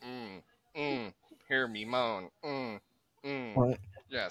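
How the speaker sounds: very slow, each sound spelled out separately. Joking that Stephen Hawking typed moans into his speech device: imitating Stephen Hawking's voice. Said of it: "he typed in his "ums" too".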